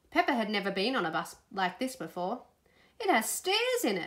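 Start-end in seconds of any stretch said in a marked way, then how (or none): 3.0-4.1 very high gasped exclamation. Narrator reads Peppa's line in a story, gasped. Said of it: "she gasped".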